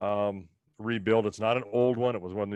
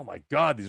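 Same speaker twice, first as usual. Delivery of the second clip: high, fed-up, exasperated outburst; 5 semitones higher than usual. Retelling a complaint about feeding heifers: imitating frustrated complaint.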